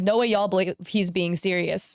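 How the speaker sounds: normal talking voice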